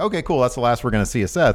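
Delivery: ordinary delivery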